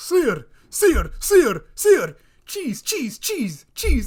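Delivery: insistent, very loud, angry repeated shouting. Retelling a woman getting mad at him, imitating an angry woman. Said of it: "she starts getting so mad at me".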